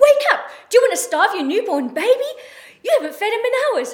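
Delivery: mock, curt, brusque, very high, very loud bark. Recalling being woken by someone from the new shift, retelling a brusque voice. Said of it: "with a brusque voice".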